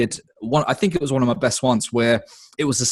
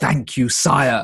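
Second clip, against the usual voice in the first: scary, creepy voice. Retelling how an improvised stream character first spoke: scary voice. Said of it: "a kind of scary voice".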